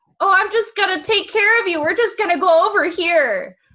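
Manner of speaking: put-on very high, loud Minnesotan-accented voice. Naming a favorite show character, the speaker does Scorpia's Minnesotan accent. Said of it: "She's got a really cool Minnesotan accent there".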